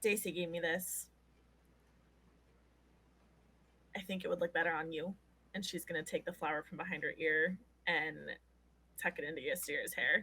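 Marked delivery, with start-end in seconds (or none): 0.0-5.1 soft, hushed, quieter voice. Voicing a character who leans in close and speaks to another character: soft voice so others can't overhear. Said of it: "make her voice, like, soft enough that other people can't necessarily overhear".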